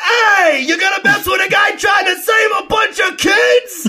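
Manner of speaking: put-on shrill, high, yelled heckling shout, New York accent. Retelling a bystander's line from a Spider-Man bridge scene: imitating a yelling New Yorker. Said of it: "where this guy's like".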